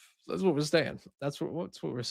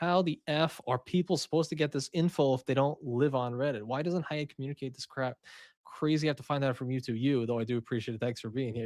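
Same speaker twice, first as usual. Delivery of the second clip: ordinary talk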